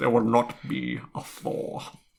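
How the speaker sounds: breathy British drawl with a slight lisp. Trying out an impression after hearing advice on doing it: Alan Rickman impression. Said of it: "advice given on how to do an impression of him".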